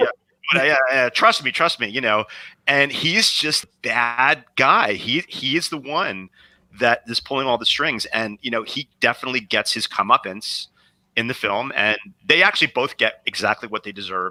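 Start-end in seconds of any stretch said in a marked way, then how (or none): 0.0-1.9 put-on offhand, half-listening, dismissive tone. Retelling how the villain Torahata answers the call: imitating distracted, dismissive Torahata.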